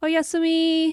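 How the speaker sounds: high-pitched, loud put-on voice. Answering a request to say a name in the voice, high-pitched voice. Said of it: "say Yasumi in the high-pitched voice".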